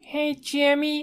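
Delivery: very high cartoon voice. Doing a cartoon character impression for the others: Carl Wheezer voice. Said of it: "I can do Carl Weezer".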